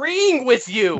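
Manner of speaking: high-pitched mock shouting. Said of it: "And yet you're still shouting".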